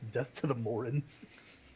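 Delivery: quiet mutter under the breath. Describing your character's action, mutter it under your breath. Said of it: "mutter under my breath".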